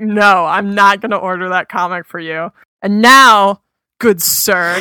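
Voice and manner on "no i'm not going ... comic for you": imitated dismissive brush-off tone. Retelling how a comic shop clerk answered a request: imitating a dismissive shop clerk. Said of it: "he was so dismissive of me".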